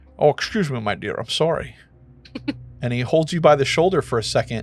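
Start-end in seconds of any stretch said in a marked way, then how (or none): 0.2-1.8 put-on suave Scottish accent, quieter and slower. Narrating an imagined encounter where a dashing man apologizes, Sean Connery impression. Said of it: "hot fantasy Sean Connery".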